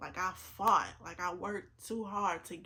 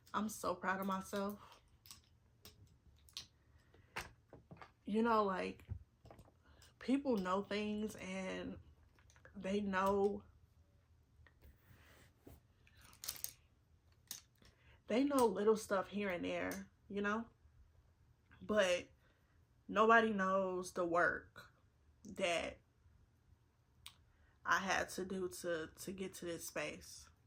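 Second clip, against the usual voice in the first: voice on the verge of tears, holding them back. Reflecting on a decade of work to reach this point, trying not to cry. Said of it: "I'm really trying not to cry".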